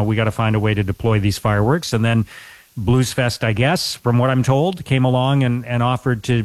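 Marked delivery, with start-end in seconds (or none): none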